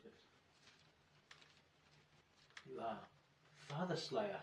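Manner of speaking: very quiet, hushed, barely voiced whisper. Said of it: "Gone very quietly".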